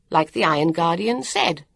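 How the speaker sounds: plain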